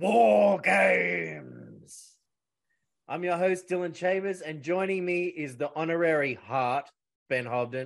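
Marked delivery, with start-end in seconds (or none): 0.0-2.2 loud, booming, raspy delivery with big swoops. Naming the event while opening the podcast: William Regal impression. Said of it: "channel my inner William Regal here".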